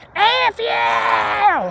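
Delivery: mock, very high, raspy screamed half-yell. Retelling the neighbor lady suddenly screaming during a phone call with mom, imitating a raspy yell. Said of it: "she had a really raspy voice like this".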